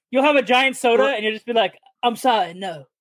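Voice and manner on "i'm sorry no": put-on English accent. Speaker tells someone to be the Simon of the group, Simon Cowell English accent. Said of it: "an English accent".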